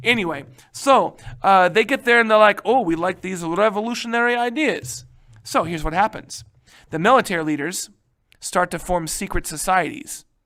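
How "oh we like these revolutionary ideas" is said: put-on Russian accent. Speaker quoting a group's reaction in a put-on Russian accent. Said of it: "I kind of sound like Gru".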